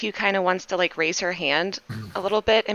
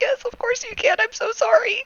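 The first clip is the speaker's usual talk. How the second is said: trembling, frantic, shaky voice, pitched very high; 3 dB louder than usual. Playing s q, answering whether she can be trusted, frantic and shaking. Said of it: "S Q is literally shaking".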